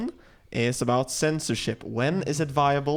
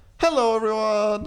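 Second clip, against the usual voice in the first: very high, over-eager, overly cheesy tone; 10 semitones higher, 4 dB louder than usual. Opening the video with a greeting: way too enthusiastic. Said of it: "That was way too enthusiastic".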